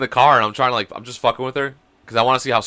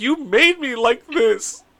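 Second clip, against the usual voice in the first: put-on high, slow crying little girl voice. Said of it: "She's like".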